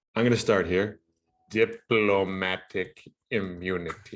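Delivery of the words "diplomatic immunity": put-on sneering professor voice. Naming a feature of an ultra PAC: Severus Snape voice. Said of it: "I had to say it like Severus Snape".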